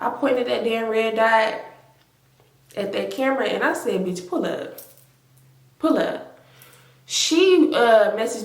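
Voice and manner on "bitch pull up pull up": mock furious, breathy, angry whisper. Retelling daring someone to pull up: imitating own angry challenge. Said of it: "I'm pissed off".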